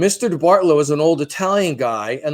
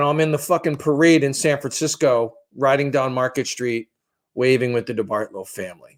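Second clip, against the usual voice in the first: usual speaking voice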